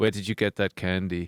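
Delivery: low, flat, deadpan monotone. Retelling Max asking from behind his monitor, imitating Max's monotone. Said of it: "They're very monotone".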